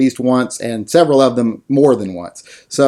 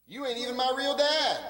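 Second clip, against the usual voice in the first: put-on very high, quiet, soft child's voice; 11 semitones higher, 16 dB quieter than usual. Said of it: "Who are you yelling at?".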